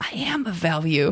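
imitated under-the-breath mutter. Retelling a game player's aside after his round, imitating a mutter under breath. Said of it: "just under his breath".

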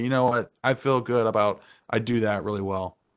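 ordinary delivery

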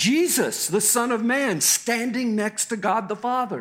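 joyful yell, high, ringing and strong.

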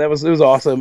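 ordinary delivery

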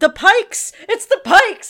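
very loud, very high, thrilled excited scream. Recalling watching Star Wars alone, the speaker reenacts screaming excitedly at the screen. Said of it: "but I screamed".

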